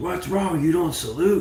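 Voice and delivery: high, loud, barking military officer voice.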